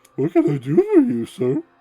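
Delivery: shrill, very high, very loud, funny cartoon squeal. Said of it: "I want the Buttocus voice".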